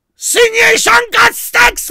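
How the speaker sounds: shouted, very high, caricatured German accent.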